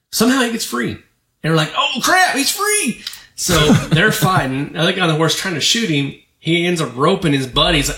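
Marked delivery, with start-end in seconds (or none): 1.7-3.0 very high, drawn-out, put-on hillbilly drawl. Retelling a clip where a hogtied man gets free, hillbilly country accent. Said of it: "very hillbillishly country accent".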